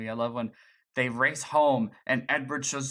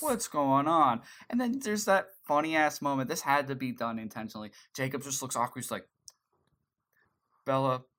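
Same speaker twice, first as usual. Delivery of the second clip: ordinary talk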